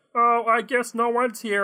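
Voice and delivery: small, high robot voice, level and monotone. Improvising a robot finding nobody in the kitchen: little robot voice. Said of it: "Am I just going to keep doing this voice?".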